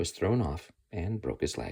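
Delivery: plain reading voice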